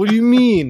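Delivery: acted indignant yell, very loud and very high. Imitating Yogi, who was mad about the outside liquor: imitating Yogi sounding mad. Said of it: "That's my impression of him".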